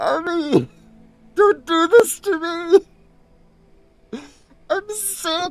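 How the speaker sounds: speaking while laughing hard. Reacting to chat messages: laughing hard while talking. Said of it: "I can't be laughing this hard".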